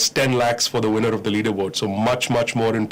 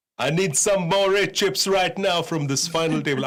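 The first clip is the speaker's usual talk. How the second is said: playful, joking, pitched-up put-on Jamaican accent; 7 semitones higher than usual. A goofy commentator on a live stream, talking like a Jamaican. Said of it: "I don't know why I'm talking like a Jamaican".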